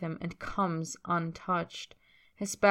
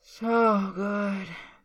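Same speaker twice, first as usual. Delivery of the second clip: put-on slurred words running together; 2 semitones higher than usual. Tyler, rolling over with visible effort to face the other man afterward, slurred. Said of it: "He slurs".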